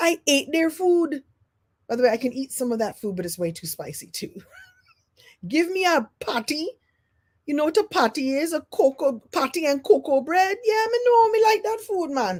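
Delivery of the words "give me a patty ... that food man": put-on Jamaican accent pitched way up high. Telling an audience about growing up and school, answer in a jamaican accent. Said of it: "You love when I do a Jamaican accent".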